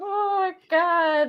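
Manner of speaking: put-on very high, tearful crying voice. Recalling a film scene about a mother and son, imitating own crying. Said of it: "that's when I started crying again".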